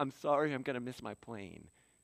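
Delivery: imitated gentle tone. Retelling ducking under a rope to catch a plane: imitating own gentle apology. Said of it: "I'm really, like, gentle".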